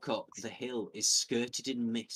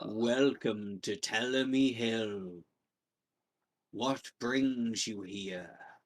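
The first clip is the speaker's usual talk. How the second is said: deep, low, rumbling voice of a talking tree. A speaker voices a tree that speaks common, low, rumbling tree voice. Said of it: "speaks in common in a low, rumbling voice".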